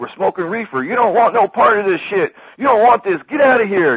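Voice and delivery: loud and high-pitched.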